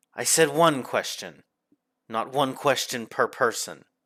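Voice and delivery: snarling, snapping retort. Voicing Pandora as she rebukes someone asking another question, snarling. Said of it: "She snarls and snaps at you and she says".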